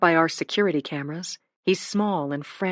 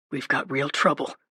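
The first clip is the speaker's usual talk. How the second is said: hushed, quiet, fast, hurried, low; 4 semitones lower than usual. Dad comes into the kitchen and tells his family, in a quiet, fast voice. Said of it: "he says in a quiet, fast voice".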